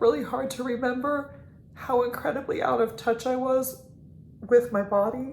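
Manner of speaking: emotional, with the voice pushed up high.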